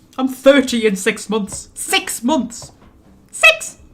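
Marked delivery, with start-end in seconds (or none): 1.7-3.8 voice rising high and squeaky. Realizing they turn thirty in six months, the speaker cries out in a squeaky voice. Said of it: "my voice went really squeaky then".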